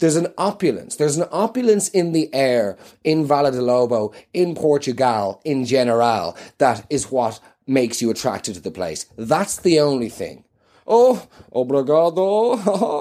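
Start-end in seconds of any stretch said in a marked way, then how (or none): 10.9-13.0 high-pitched speech with chuckling laughter through the words. Saying thanks in Portuguese, laughing while talking. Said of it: "Why are you laughing when you say thanks".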